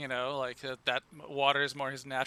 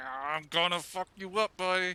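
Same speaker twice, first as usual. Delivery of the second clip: slow, drawn-out, menacing tough-guy voice; 4 semitones higher than usual. Voicing a character choking a captive: menacing threat while choking him. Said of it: "choking him, like".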